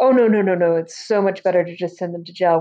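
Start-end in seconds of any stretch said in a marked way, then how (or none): none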